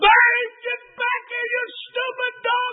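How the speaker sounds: very high-pitched yelling. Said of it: "And I was yelling".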